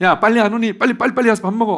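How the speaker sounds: very high, very loud, shrill, rapid scolding yell. Contrasting Jesus' call to breakfast with how moms call kids: imitating a mom calling kids. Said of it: "우리 엄마들이 가끔 애들한테 이제 그렇게 하는데 그런 목소리".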